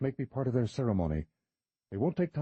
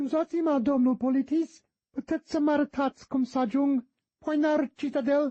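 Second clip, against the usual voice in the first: loud, very high, mocking falsetto; 13 semitones higher, 5 dB louder than usual. A man teasingly voices his companion's imagined question, falsetto voice. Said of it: "Said [name] in a falsetto".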